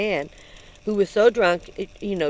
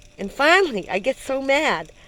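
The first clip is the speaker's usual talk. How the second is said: normal talking voice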